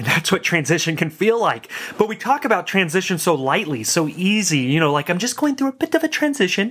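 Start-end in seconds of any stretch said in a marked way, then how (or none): 4.9-6.7 terrible English gentleman accent, very high-pitched. Mocking how lightly people talk about transition, in a terrible English accent. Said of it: "That's a terrible English accent".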